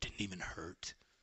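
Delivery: mumbled, barely audible aside, muttered under the breath. Retelling what he said walking away from mama's scolding, muttering under his breath. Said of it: "kind of under his breath".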